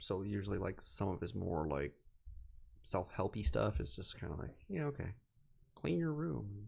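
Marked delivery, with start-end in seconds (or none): 4.7-6.5 put-on high frog puppet voice. Mocking someone's self-help advice, the speaker slips into a Kermit the Frog voice. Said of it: "really fucking Kermit the Frog voice".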